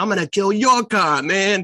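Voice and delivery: acted-out, high-pitched yelling. Retelling a scene where a guy runs out: imitating a man yelling. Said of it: "starts yelling at him".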